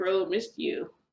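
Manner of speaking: put-on laughter through the words. Retelling what a man said when welcoming the speaker, imitating someone laughing while talking. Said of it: "And he starts laughing".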